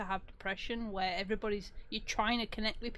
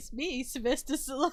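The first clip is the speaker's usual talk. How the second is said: mock triumphant tone, pitched higher; 4 semitones higher, 4 dB louder than usual. Mocking a movie hero who takes off his helmet: imitating Sylvester Stallone as Judge Dredd. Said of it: "He's like".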